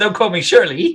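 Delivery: put-on English village accent. Retelling how Dusty Rhodes steps in and answers Tony Schiavone, use a put-on Hot Fuzz accent. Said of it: "I don't know what that accent was. I felt like I was in Hot Fuzz".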